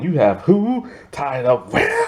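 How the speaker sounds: angry, disbelieving, high, swooping outburst. Retelling a scene where the Joker learns what Harley did: imitating angry Joker. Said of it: "so he pissed".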